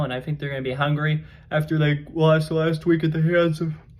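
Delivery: talking through a yawn. Speaker previewing a college football game, yawning while talking. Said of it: "sorry, I'm yawning".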